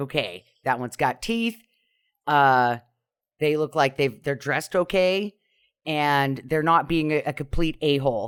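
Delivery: ordinary delivery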